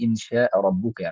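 plain

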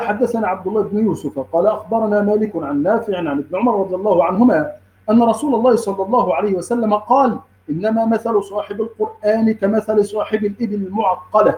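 ordinary talk

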